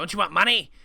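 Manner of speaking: mocking nasal voice. Speaker retells a man on a podcast mocking fans asking Nintendo, mocking nasal voice. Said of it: "a nasally voice, making fun of people".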